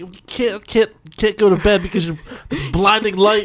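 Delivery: put-on high, angry, fed-up, annoyed stammering voice. Imagining Clarice getting mad at Rudolph's glowing nose in bed: imitating Clarice getting mad. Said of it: "And then she gets all mad".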